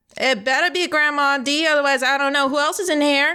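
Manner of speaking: put-on old grandma voice, sounding from another room. Voicing a grandmother character heard from inside the house: voicing Grandma D. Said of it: "you hear a voice from inside".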